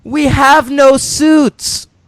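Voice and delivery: very high, loud calling out. Recounting a skinny-dipping scene from a movie, Crispin Glover calling out. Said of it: "Crispin Glover just calls out".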